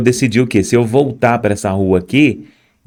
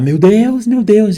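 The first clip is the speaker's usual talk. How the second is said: put-on woman's scream, much higher, slower; 7 semitones higher than usual. Retelling how a woman reacted on seeing the bloodied speaker: imitating her scream. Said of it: "Aí ela começou a gritar".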